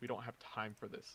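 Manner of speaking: mumbling under the breath. Voicing Uther as the party arrives: Uther mumbling under his breath. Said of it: "Uther mumbles under his breath".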